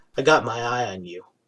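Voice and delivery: very quiet, low mutter under the breath. The game master voices Herrick as the player passes him: Herrick muttering under breath. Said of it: "he just mutters under his voice".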